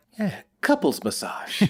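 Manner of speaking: hushed, barely-there whispered mutter under the breath. Retelling a gift-giver's reply to thanks: imitating a quiet mutter. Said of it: "real quiet, P J mutters".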